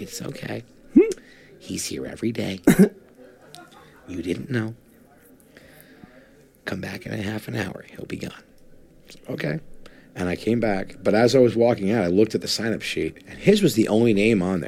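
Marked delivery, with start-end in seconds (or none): 0.0-8.3 gentle, kind, sweet, soft whisper. Retelling what the librarian said after a man kept screaming; imitating a sweet librarian. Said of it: "the librarian was very sweet".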